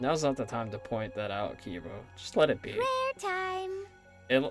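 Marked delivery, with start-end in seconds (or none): none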